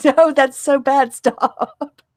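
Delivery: put-on very slow, loud, high, drawn-out screech. Imitating the other speaker's reaction to a bad accent attempt: imitating someone screaming. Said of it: "you would just be screaming, going".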